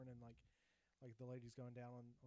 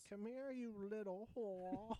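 put-on grandpa voice, higher and louder; 9 semitones higher, 8 dB louder than usual. Acting out a grandpa in a kink scene for a laugh: acting as a grandpa. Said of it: "You'd just be like".

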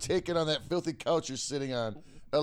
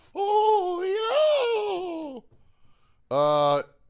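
very high, shrill, swooping put-on voice, stretched opening; 5 dB louder than usual. Answering a listener's podcast request, in a Paul Bear voice. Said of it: "give me a oh yeah in Paul Bear voice".

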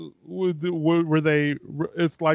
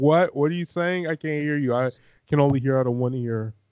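ordinary talk, nothing marked

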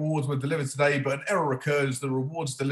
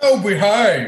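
very loud, high-pitched, belted out; 6 semitones higher, 11 dB louder than usual. Answering a remark about sounding like Austin Powers: Austin Powers voice. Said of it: "We don't all sound like Austin Powers".

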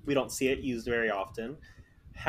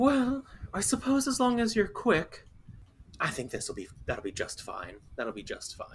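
put-on very sweet feminine voice; 7 semitones higher than usual. Retelling a scene, the speaker voices a woman heard from a room; very sweet feminine voice. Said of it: "very feminine, sweet voice".

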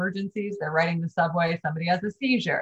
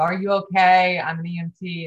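plain

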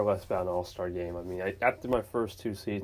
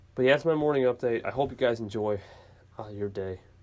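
worn-out, weary, beat-sounding voice; 3 semitones higher than usual. Wrapping up a morning update to viewers, in a tired voice. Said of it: "I sound very tired".

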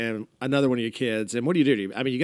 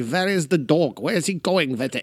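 put-on German-accented voice, raised pitch; 5 semitones higher, 4 dB louder than usual. Retelling what the dog trainer says: imitating a German accent. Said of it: "She's got the German accent. She's like".

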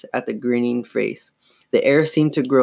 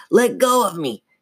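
raspy, grumbling snarl, pitched up; 7 semitones higher than usual. The dummy struggles as [name] grabs him around the waist: raspy deep snarl. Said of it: "he snarled, his raspy, deep grumble of a voice".

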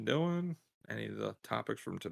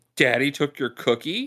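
very loud, carrying voice for all to hear; 4 semitones higher, 9 dB louder than usual. A father quoting his wife's reply to their child, retelling her saying it loudly. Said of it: "And she'll say it loudly".

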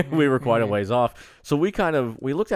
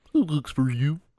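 puppet-style frog voice making an owl hoot; 4 semitones higher than usual. Describing an owl sound they heard, doing Kermit doing an owl call. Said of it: "Kermit doing his best owl impression".

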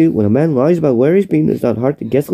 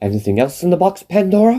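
acted scandalised, outraged, indignant, with rising pitch; 3 semitones higher than usual. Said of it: "It's the way he delivers it".

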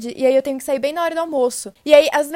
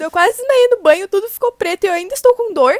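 put-on sobbing, tearful, high-pitched and loud; 5 semitones higher, 5 dB louder than usual. Speaker retelling what she said to her mom, imitating her own crying. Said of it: "chorando pra minha mãe".

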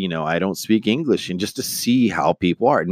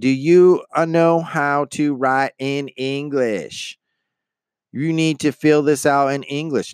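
raised, high-pitched voice; 7 semitones higher than usual. Retelling how a lady spoke to a man holding up a long line, imitating her raising her voice. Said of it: "the lady starts raising her voice".

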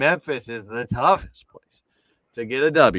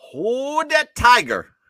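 put-on Bayou accent, very high, raised pitch; 12 semitones higher, 6 dB louder than usual. Introducing the next team with an impression: Brian Kelly doing a Bayou accent. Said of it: "my impression of Brian Kelly doing a fucking Bayou accent".

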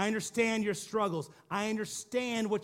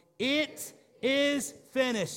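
really loud, said all together with a crowd; 4 semitones higher than usual. Leading the congregation in saying the words together, really loud. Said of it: "say it with me, really, really loud".

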